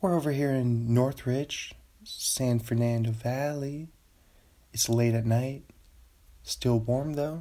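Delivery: smooth late-night public radio host voice. Speaker showing how you have to talk on NPR, NPR voice. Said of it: "this is my NPR voice".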